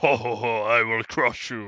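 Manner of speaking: giant strongman's taunting ho-ho laugh. Acting out a made-up arm wrestle, imitating a seven-foot-tall man. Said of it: "seven-foot-tall man and be like".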